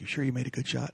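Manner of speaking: quiet whisper. Retelling what a man asked at the blind after the shot, retelling a whisper. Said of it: "he's whispering the whole time".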